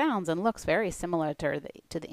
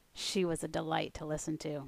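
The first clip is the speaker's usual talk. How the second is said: plain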